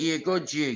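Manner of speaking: put-on Jamaican accent. Retelling what the neighbour said to him: imitating a jamaican accent. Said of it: "Jamaican lady".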